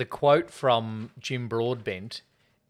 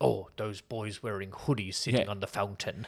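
mocking officious tone, quieter; 3 semitones lower, 6 dB quieter than usual. Imitating the town's Neighbourhood Watch Alliance: imitating an officious resident. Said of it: "officious and like".

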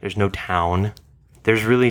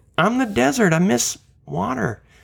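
put-on laid-back surfer-dude voice, higher; 13 semitones higher than usual. Retrying the desert voice after being told to do better: Owen Wilson voice. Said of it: "You could do a better impression than that".

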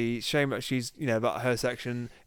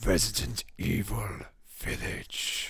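rasping, raspy announcer voice; 4 semitones lower than usual. Asked to do the voice, announcing a game title: raspy announcer voice. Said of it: "You're rasping".

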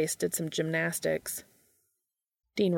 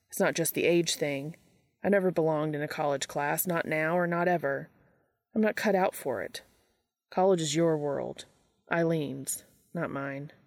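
ordinary delivery

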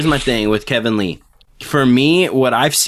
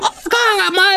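very high drawn-out mocking child voice. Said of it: "Why am I talking like that".

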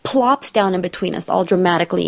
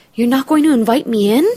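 play-acted stunned, shocked disbelief, pitched up; 5 semitones higher, 4 dB louder than usual. Retelling what a date asked at her door: imitating Brian's shocked question. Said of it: "genuine shock on his face".

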